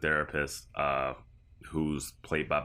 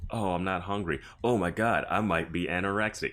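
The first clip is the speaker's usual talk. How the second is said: dry, sarcastic, plainly not serious, acted-out delivery. Retelling a scene where a daughter ribs her parents, imitating her sarcastic remark. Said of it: "she's saying it like sarcastically".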